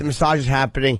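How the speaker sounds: ordinary delivery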